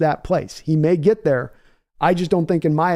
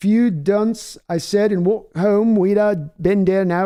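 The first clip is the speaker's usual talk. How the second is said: rough, clumsy attempt at a West Country British accent; 3 semitones higher than usual. Speaker offers to try a West Country British accent, attempted West Country British accent. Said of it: "for a West Country British accent, try this".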